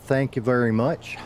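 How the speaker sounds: droopy, hangdog cartoon hound voice. Thanking someone after finding the clipboard: sounding like Droopy Dog. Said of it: "that sounded like Droopy Dog".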